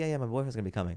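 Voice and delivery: fast, terrible put-on Spanish accent. Retelling what a woman said about her boyfriend coming to the show, terrible spanish accent. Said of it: "This is a terrible Spanish accent".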